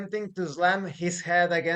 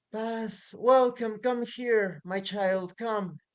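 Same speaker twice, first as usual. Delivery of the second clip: slow woman's voice calling up from below; 4 semitones higher than usual. Game master voicing a woman below calling a player down; woman's voice from below. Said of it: "the voice of a woman coming from below".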